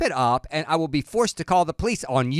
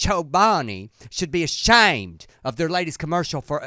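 silly put-on Southern woman voice. Quoting One Million Moms' statement in a silly Southern woman's voice. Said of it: "one silly Southern woman's voice".

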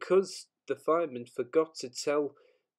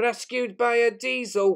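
loud, high, disgusted snort through the words; 8 semitones higher, 5 dB louder than usual. A narrator reads James's line after a diesel is sent to help him, snorted disgustedly. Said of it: "he snorted disgustedly".

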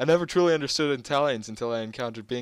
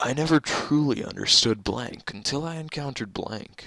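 grand, dramatic, theatrical stage-play delivery. Reading out a fill-in-the-blank game prompt, in a dramatic voice. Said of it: "I going to do like a dramatic voice?".

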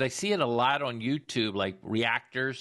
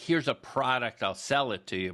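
plain

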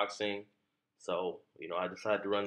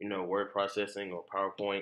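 plain

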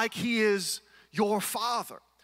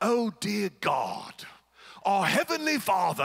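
put-on formal, old-fashioned, very drawn-out delivery. Mocking how people change their voice when they start praying: King James prayer voice. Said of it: "They go straight from talking how they normally talk straight to King James".

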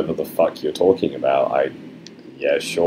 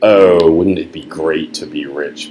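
plain

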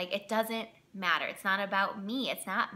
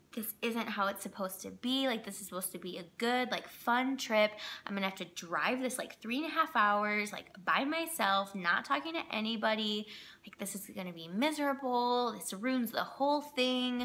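ordinary delivery

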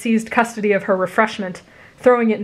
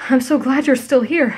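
slightly out of breath, much higher pitch; 4 semitones higher than usual. Izuku, having run to find you, speaks to you slightly out of breath. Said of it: "slightly out of breath from running".

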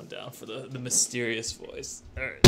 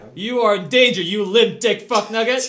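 very high, shrill, loud drill-sergeant yelling; 9 semitones higher, 5 dB louder than usual. A character in the game yells insults at the player, yelling. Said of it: "why is he yelling at me like this?".

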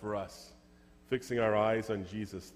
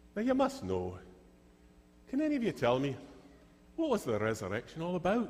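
put-on slight, lilting, swooping Scottish accent; 7 semitones higher than usual. Telling a story, speaker quotes a man addressing the children in front of him: slight Scottish accent. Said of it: "We got a little bit Scottish there".

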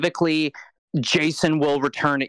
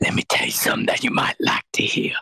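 put-on sweet villainous whisper. Acting out a villain whispering sweet lovelies into a dragon's ear: imitating Rita whispering sweetly. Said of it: "she whispers sweet lovelies into his ear".

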